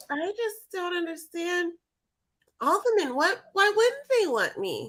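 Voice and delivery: very high, accurate put-on woman's voice. Quoting a woman called Jefferson, imitating Jefferson. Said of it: "You sounded just like her".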